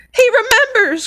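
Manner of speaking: shrill, very high, loud, thrilled excited cry. Reading a story aloud, a character recognised by a boy: excited cry. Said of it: "cried Daedalus Diggle".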